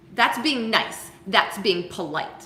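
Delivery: tart, snippy, short little remark. Retelling what a woman said directly to them, imitating her snippy tone. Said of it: "In exactly that snippy tone".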